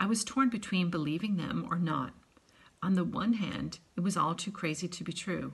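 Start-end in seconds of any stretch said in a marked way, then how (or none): none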